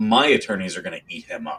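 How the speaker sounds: ordinary talk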